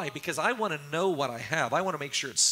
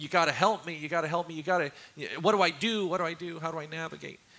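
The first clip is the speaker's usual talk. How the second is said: put-on crying, tearful, pleading voice. Retelling a phone call asking for prayer: imitating someone crying and pleading. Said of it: "he called me up crying and wanting prayer".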